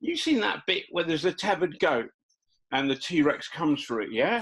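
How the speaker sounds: put-on Essex accent. Retelling what Sarah asked John, imitating Sarah's Essex accent. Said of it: "Sarah's got an Essex accent".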